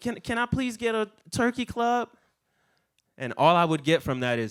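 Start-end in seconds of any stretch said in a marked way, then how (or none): 0.0-2.1 put-on, pitched-up, very polite, extra-nice voice. Retelling how a customer might order, imitating a very nice customer. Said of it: "you could come up to me the nicest way".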